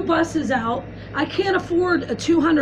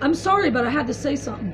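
normal talking voice

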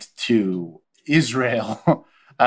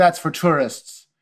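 put-on Jamaican accent; 6 semitones higher than usual. Retelling what the speaker's wife said back, imitating a Jamaican accent. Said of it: "she's speaking a Jamaican accent".

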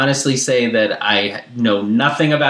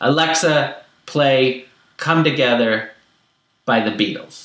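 robotic, machine-like, concise, bare-minimum phrasing. Showing how he gives a command to the family's voice assistant, almost robotic. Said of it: "Robotically, almost".

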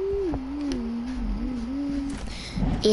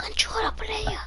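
put-on impression voice, much higher pitch; 10 semitones higher than usual. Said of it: "This is my impression of laser beam saying controller player".

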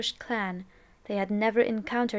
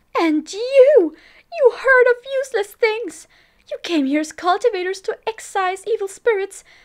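shrill, very high, very loud screeching shriek; 12 semitones higher, 12 dB louder than usual. Narrating, Lady Mo charges at Lan Sijue and the cultivators, screeching. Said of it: "[name] shrieked, "My son died a terrible death tonight! I must avenge him! What are you doing? Why are you trying to stop me?"".

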